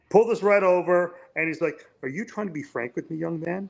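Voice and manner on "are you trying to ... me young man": soft, dry, tongue-in-cheek delivery. Retelling what a Canadian officer asked him; mimicking dry Canadian humor. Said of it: "Canadian dry humor".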